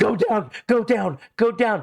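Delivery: mock terrified, high screaming. Retelling a mother on a plane ride: imitating someone screaming. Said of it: "she's screaming".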